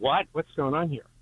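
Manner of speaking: plain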